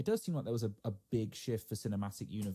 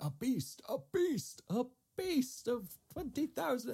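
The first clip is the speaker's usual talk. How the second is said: energetic trailer narration, pitched up and drawn out. Retelling a line from a movie trailer: imitating an energetic trailer announcer. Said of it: "just the way he says it with so much energy".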